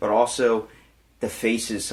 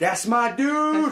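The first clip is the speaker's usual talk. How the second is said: put-on piercing, very high-pitched, shrill scream; 3 dB louder than usual. Retelling spotting the triangle player in class: imitating own past scream.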